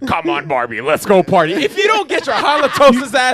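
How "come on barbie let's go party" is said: creepy, sleazy, nasty deep put-on voice. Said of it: "did you hear his voice?".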